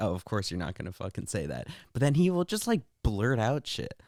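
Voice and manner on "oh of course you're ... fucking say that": mocking, scoffing, sarcastic tone. Retelling a joke made during a call: retelling own sarcastic line. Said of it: "I said it, like, sarcastically".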